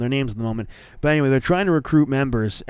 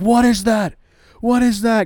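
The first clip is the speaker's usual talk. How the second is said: livid, shrill, high-pitched furious outburst with raised voice; 10 semitones higher, 6 dB louder than usual. Retelling how Brodie Lee came in livid at a teammate: imitating a livid Brodie Lee. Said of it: "and he's livid".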